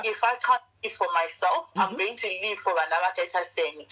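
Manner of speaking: usual speaking voice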